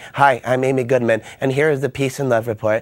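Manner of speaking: flat, level monotone with no swing. Impression of Amy Goodman opening her report, flat monotone Amy Goodman voice. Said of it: "She'll talk to you like monotone, like".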